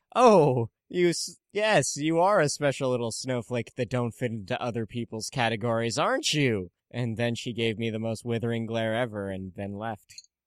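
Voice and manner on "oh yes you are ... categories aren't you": light, playful, mocking teasing tone. Retelling what they said to a teenage girl they work with: retelling teasing someone. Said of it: "I was teasing her about Divergent".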